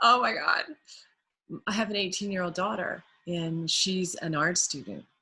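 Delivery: voice on the edge of tears. Reacting to thoughts on teaching figure drawing: on the verge of tears. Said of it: "I'm, like, almost crying right now".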